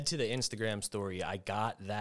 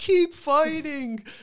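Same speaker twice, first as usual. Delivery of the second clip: put-on high, loud scream of a little kid. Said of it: "He's screaming".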